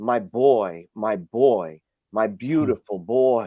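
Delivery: put-on anguished cry, dragged out very slowly. Retelling a godmother crying out at a casket: imitating a gut-wrenching cry. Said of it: "crying out in the most gut-wrenching sound".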